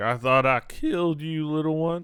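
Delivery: put-on orc voice with Southern accent. Voicing orc number one, speaking in a southern-accented orc voice. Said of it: "I love the thought of a southern accent orc".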